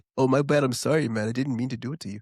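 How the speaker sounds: mock polite, apologetic Canadian voice. Imitating a polite Canadian who apologizes after bumping into someone. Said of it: "they'll be like".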